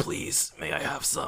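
dry-throated, parched, breathy whisper. Acting out a starving villain's line: dry-throated Don Krieg voice. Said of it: "speaking with, like, a dry throat".

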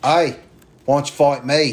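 horrible, clumsy put-on Australian accent. Going through the rankings, challenging someone in a horrible put-on australian accent. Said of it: "in my horrible Australian accent".

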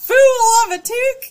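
put-on Southern accent, shrill, high and loud. Friends reading aloud in wacky voices, one asks for Southern Gandalf; Southern-accent Gandalf. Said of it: "Archer said Southern Gandalf".

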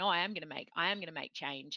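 plain

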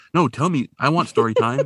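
put-on eager childlike voice. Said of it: "he's all Mister Hard Ass, and he's like".

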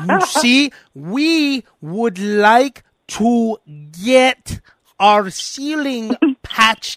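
put-on dumbed-down condescending talk. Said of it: "talking to him like an asshole now".

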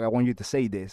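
whispered speech. Retelling what a colleague whispered backstage: imitating Joe Janela whispering. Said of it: "he whispers in my ear, and he's like".

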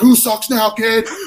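high, drawn-out, gloating, taunting scream. Retelling a moment at a wrestling show when the team won: retelling a scream. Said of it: "I remember screaming in the kid's face".

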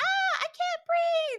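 very high, slow, squeaky puppet-voice gasp. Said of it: "mimes for them to be saying".

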